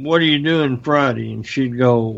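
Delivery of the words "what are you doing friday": ordinary delivery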